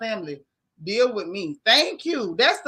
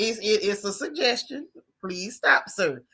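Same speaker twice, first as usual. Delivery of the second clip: put-on, nice, courteous, stumbling tone. Retelling a polite request to stop: imitating T.I.'s polite tone. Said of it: "the nice, polite, you know".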